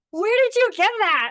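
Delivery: very high, loud, belted amazed exclamation.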